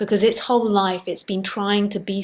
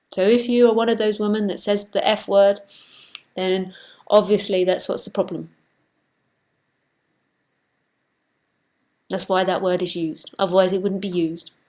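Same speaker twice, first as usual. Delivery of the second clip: sarcastic, tongue-in-cheek, mocking delivery. Commenting on what a lady kept writing to her: sarcastic. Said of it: "I'm being sarcastic".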